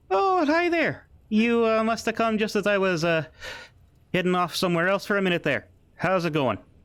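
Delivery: put-on Irish accent. Voicing a character greeting the players who return: Irish accent. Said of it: "I don't know if I made him Irish before, but he is now".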